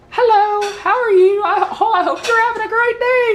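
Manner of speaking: very high put-on woman's phone voice. Describing how her voice changes when she answers the phone, imitating her phone voice. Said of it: "Did I just sound like a woman right there?".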